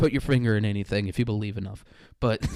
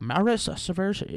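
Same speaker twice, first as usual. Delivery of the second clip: put-on Chinese accent, pitched up; 8 semitones higher than usual. Guessing where a latin name comes from: put-on chinese accent. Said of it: "a Chinese accent".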